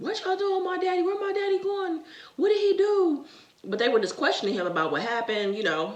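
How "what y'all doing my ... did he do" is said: put-on very high, shrill child screaming, acting up. Retelling screaming as a child while police questioned dad: imitating own childhood screaming. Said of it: "And I'm screaming, acting up".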